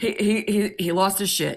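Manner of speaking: ordinary delivery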